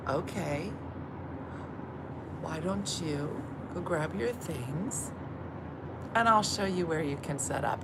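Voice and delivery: put-on warm, motherly hostess-like voice. Retelling a moment with Eileen, the speaker slips into mom voice. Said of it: "I go into mom voice".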